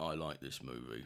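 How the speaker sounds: very low hushed voice. Doing an impression of the other speaker in a lower-toned voice. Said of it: "Your impression of me is a lower toned voice saying".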